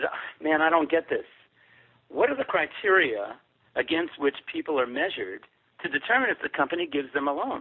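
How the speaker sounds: plain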